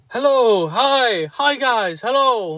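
mock holler, very high-pitched and very slow, drawn out. Retelling a man coming over to greet them: imitating a man shouting a greeting. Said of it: "this guy comes over shouting".

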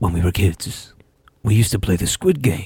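heavy, deep, dramatic changed voice. Retelling a line from the Korean version of Squid Game, imitating the original's tone. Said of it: "I'm just going to change the tone of my voice where he's like".

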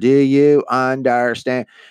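slowed-down, high-pitched yelling. Retelling how a lady yelled at a man who speaks no English, imitating her yelling slowly. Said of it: "she's like yelling, like going even slower".

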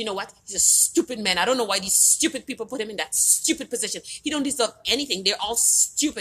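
heated, worked-up, angry ranting tirade, acted out. Retelling a client's reaction to the election result: imitating an angry client. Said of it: "She was just so angry".

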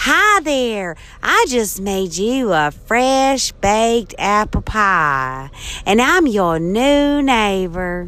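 put-on slow Southern drawl, pie stretched. Showing off an accent with a new-neighbor greeting line: southern accent. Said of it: "I can do a real nice southern accent like".

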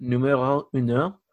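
put-on Spanish spoken with a French accent. Announcing the number ones pick, Spanish with a French accent. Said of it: "that was a Spanish with a French accent".

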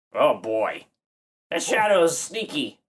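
put-on brash parrot voice with New Jersey accent. In a tabletop game, a player speaks as the parrot: New Jersey parrot voice. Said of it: "and I'm that parrot guy, ... [name] has got a little bit of a New Jersey thing happening this morning".

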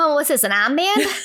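put-on heavy Massachusetts accent. Retelling own childhood words about an armband: imitating own childhood strong Massachusetts accent. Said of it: "I had such a bad Mass accent when I was little".

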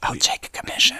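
whispering. Talking to someone about designing new wheels, whispering. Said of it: "I don't know why I'm whispering".

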